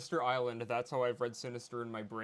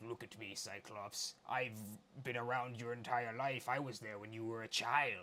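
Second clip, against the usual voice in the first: soft, quiet, creepy villain voice; 5 dB quieter than usual. Showing how they read the character Sinister, in a creepy Sinister voice. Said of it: "that cre- creepy Sinister".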